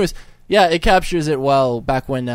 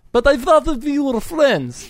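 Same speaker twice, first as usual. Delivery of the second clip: very high-pitched put-on Russian accent; 12 semitones higher than usual. Playing the Russian president in a comic skit: Russian accent. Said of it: "I can do Russian".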